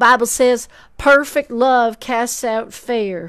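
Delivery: put-on Southern accent. Quoting a bible verse for a listener, in a southern accent. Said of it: "I'm gonna do it with a southern accent".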